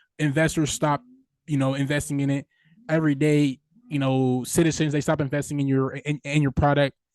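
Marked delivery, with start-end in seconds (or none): none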